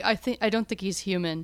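put-on flat deadpan tone. Quoting a character's reply to the secretary: mimicking a deadpan delivery. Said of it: "The delivery of his lines are so deadpan".

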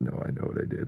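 soft whispered aside to himself.

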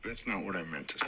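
deep gruff voice.

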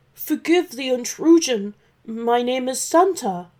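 stammering. Santa, caught eating in the dragon's home, answers the dragon, stammering.

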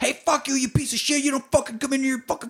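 put-on very high, shrieking, screamed outburst. Retelling a man answering a call he thinks is the cops, imitating him screaming. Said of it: "he's like screaming".

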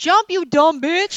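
loud, high-pitched, drawn-out yell.

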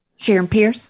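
said really fast, rushed. Finishing the show's sign-off with a name: said really fast. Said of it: "I see I said it really fast this time".

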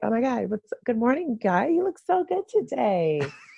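pushed-up, rising voice. Showing how he talked on the job, talking a little bit higher. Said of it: "just talk a little bit higher".

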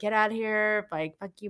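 put-on aggressive outburst, toned down to a mild angry yell. Retelling how she screamed at him to get out: imitating someone screaming. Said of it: "hitting him and screaming at him".

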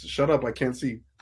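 normal talking voice

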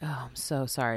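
put-on pitying tone. Retelling how he apologized to her, imitating a pitying, lower voice. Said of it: "Your voice got 3 pity octaves lower".

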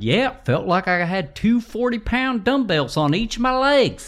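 very high-pitched impersonation. Retelling what a contestant said on the show, imitating Brian. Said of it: "That's a really good impersonation".

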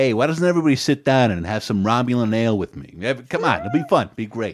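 slight mobster-style voice slipping into the speech. Riffing on a Star Trek plot, the speaker slips into an Alan Alda impression. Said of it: "Your Alan Alda sounds a little Tony Soprano".

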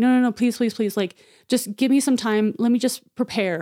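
put-on desperate, pleading, begging tone. Retelling a story where a woman begs the man dragging her, acting out pleading for life. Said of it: "pleading for her life".

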